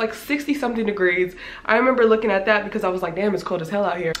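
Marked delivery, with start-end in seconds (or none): none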